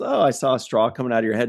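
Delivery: put-on flat, matter-of-fact voice. Retelling Data describing his dream to Riker: imitating Data, matter-of-fact. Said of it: "he says it so matter-of-factly".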